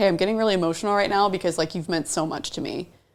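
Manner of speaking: plain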